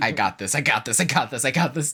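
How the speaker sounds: put-on flustered panic, slow and rising. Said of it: "She's just like".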